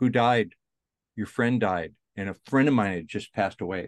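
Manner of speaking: plain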